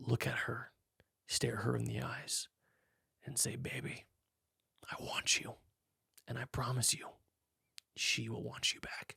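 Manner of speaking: slow, breathy, romantic, aroused seductive whisper. Coaching a man on what to say to his wife in a big moment, acting it out. Imitating a seductive romantic voice. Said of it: "The voice literally just turns on".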